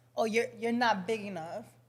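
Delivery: ordinary delivery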